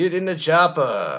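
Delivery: slow, high yell. Retelling what her partner yelled during sex, yelled Arnold Schwarzenegger voice. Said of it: "in an Arnold Schwarzenegger voice".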